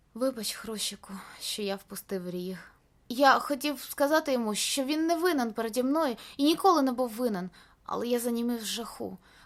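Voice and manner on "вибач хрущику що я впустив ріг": soft, gentle, affectionate tender voice. Looking at his companion while a beast stands watching, a character apologizes tenderly. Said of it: "ласкаво сказав".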